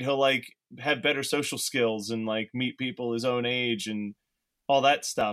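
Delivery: plain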